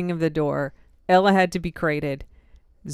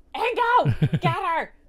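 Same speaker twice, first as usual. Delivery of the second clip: angry, very high, loud shouted yell; 13 semitones higher than usual. Retelling shouting at Ingo as she bolted toward the RV, retelling a loud angry shout. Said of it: "But very loud and angry".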